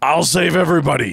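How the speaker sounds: raspy put-on superhero voice. Joking about someone calling himself God, in a Batman raspy voice. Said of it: "is that your Michael Keaton Batman raspy voice".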